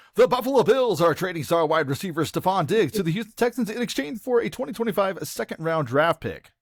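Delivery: overblown, over-the-top dramatic delivery, very high pitch. Showing a reader the kind of delivery not wanted, over-the-top dramatic reading. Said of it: "over the top, dramatic reading".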